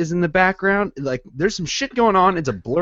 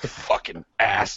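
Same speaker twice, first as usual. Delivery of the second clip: mock mumbling under breath, quieter and lower; 8 semitones lower, 7 dB quieter than usual. Telling how someone cleaned alone until four-thirty a.m.: retelling someone mumbling under breath.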